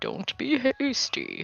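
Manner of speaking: very high-pitched tree-giant character voice. After someone suggests a night of rest, answering in a Treebeard voice. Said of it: "put on like my best tree beard voice".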